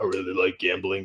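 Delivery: low deep voice. Playing another player's character after swapping roles: deep voice. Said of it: "'cause it's gotta have that deep voice".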